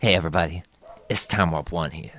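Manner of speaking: sassy, showy tone. Correcting another speaker's impression of a ranter: sassy Time Warp one impression. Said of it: "you gotta have a little bit of sass in there".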